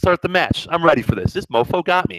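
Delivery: ordinary delivery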